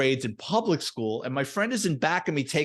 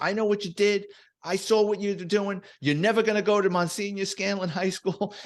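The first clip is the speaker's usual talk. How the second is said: acted, put-on, pitched-up screaming voice; 6 semitones higher than usual. Retelling how she burst through the door at the speaker and a friend, imitating her screaming. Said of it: "she's screaming at the two of us".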